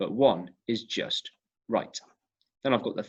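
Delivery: ordinary delivery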